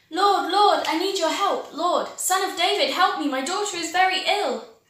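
high, very loud cry at full volume. Reading a story, voicing a foreign woman calling out in the street: shouting as loud as she could. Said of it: "came out into the street and started shouting".

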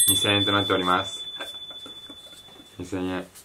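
deflated, subdued, dejected delivery.

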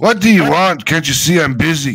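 very loud, booming dwarf voice. Narrator voices the dwarf at the forge as the listeners walk up: small dirty dwarf voice. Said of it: "small, dirty dwarf working the forge".

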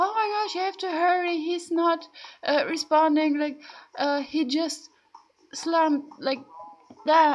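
mock shrill, high, frantic panicked screaming. Retelling a neighbor on the phone with 911, retelling a panicked scream. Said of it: "she was screaming in the phone".

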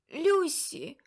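abrupt, sudden, high-pitched cry. Narrator reading an aunt's sudden cry in a chilling room: sudden shout. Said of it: "раптом вигукнув хтось".

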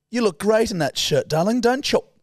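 put-on high grandma voice. The speaker recalls how their nan always used to talk, imitating the speaker's nan. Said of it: "She'd always be like".

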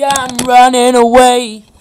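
booming, deep, very loud full-volume voice. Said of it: "I'm speaking into the microphone really loudly".

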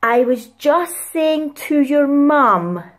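very loud, deliberate, slow, drawn-out words. Retelling how a woman turned to her and spoke, imitating a very loud slow voice. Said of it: "she said in a very loud and slow voice".

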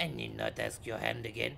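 bad, low, put-on failing Spanish accent. Praising an actor's delivery, the speaker quotes his line, attempting a Spanish accent. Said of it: "I'm trying to do the accent".

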